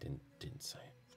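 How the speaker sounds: quiet, slow theatrical whisper.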